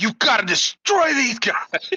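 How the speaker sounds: savage, bloodthirsty, very high-pitched yell. Yelling to Bass Beer to destroy these guys, bloodthirsty yell. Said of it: "I'm trying to say it in the most bloodthirsty way possible".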